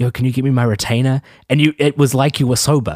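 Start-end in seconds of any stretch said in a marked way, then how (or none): 0.0-1.2 put-on whisper. Retelling a drunk friend's words at the bedroom door: imitating Mason's whisper. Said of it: "whispering to me, like".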